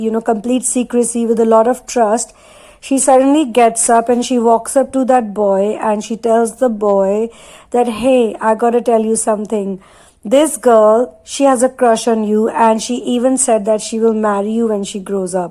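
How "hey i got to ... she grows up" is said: ordinary talk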